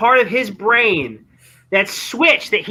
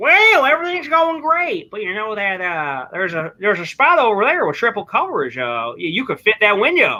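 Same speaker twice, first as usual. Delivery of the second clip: put-on Southern accent. Imitating someone who makes the same mistake every time: put-on Southern accent. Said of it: "Why are you talking with a Southern accent?".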